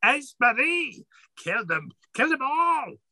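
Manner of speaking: shrill, high-pitched, screeching hag scream. Voicing the three-headed hag urging her ally on: Granny Hagfling screaming. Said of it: "she screams out".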